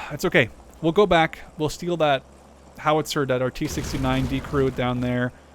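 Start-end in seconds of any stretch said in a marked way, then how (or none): none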